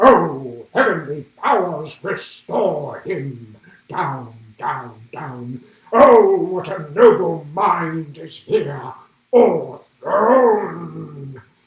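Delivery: very loud, slow, booming ogre voice. An actress recalls her big scene with Hamlet, playing Ophelia in an ogre voice. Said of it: "making Ophelia sound like an ogre".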